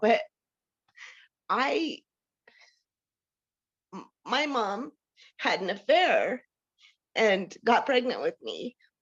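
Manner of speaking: crying, tearful speech. Responding after someone remarks on their emotions, crying while talking. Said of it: "it's ridiculous that I'm crying".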